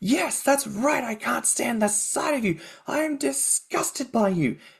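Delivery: mock very high-pitched screaming outburst. Retelling a film scene where he breaks down: imitating a man screaming.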